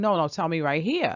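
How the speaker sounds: ordinary delivery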